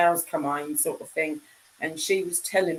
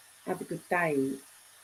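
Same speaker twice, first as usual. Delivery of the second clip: put-on Australian accent, quieter voice; 7 dB quieter than usual. In a chat, a speaker tries the greeting in an Australian accent. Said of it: "That's Australian".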